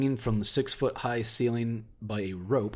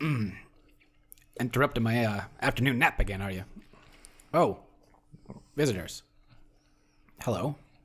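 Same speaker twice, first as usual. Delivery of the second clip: acted, put-on voice of a talking oil can. Voicing an awakened oil can woken from his nap: voicing Squirt the oil can. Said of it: "He goes".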